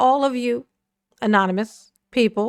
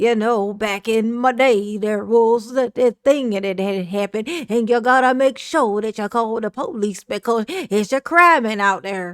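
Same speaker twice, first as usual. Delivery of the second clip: put-on dated, old-fashioned, old-timey storytelling voice. The speaker mimics how a man talks, in an old sepia-tone voice. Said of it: "He talks with that old sepia tone voice".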